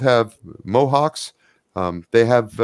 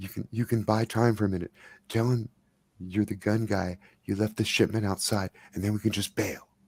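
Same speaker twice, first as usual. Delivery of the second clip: hushed, very quiet, conspiratorial half-whisper; 10 dB quieter than usual. Voicing a character urging a friend to stall: half-whispering in character. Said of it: "he's whispering to Trey".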